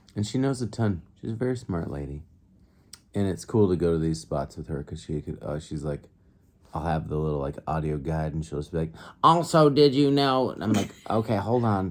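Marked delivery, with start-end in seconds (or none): 9.2-10.5 very high, slow, know-it-all nerd voice. Speaker imitates a smart companion chiming in over the audio guide, in a nerdy voice. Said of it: "That's my nerdy voice".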